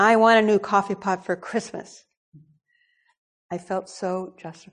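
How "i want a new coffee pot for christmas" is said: angry, agitated, complaining outburst. Retelling a complaint to her husband about the coffee pot: imitating own angry voice. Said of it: "I said in an angry voice".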